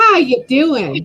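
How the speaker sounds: big, loud called-out voice. Imitating how a commenter says her greeting: imitating a viewer's greeting. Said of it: "I can't do it like her".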